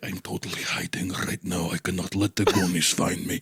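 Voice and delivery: acted monster character voice. Imagining a vampire hiding from the Goonies: imitating Nosferatu hiding. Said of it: "imagine Nosferatu sitting there ... He's like".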